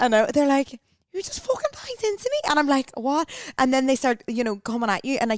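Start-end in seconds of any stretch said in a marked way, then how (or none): 1.1-2.5 put-on Liverpool Scouse accent, pitched very high. Retelling what girls in Liverpool said to them, Liverpool accent. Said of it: "I've got a Liverpool accent here".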